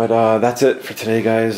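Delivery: hyped-up energetic voice. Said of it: "trying to be quiet 'cause my kids are sleeping".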